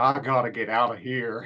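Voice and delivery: put-on muttering under breath. Retelling what an elderly man said leaving a restaurant: imitating muttering under breath. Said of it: "declares under his breath".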